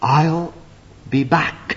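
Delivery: quiet mutter under the breath. The speaker acts out the devil going away, muttered under his breath. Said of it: "he mutters under his breath".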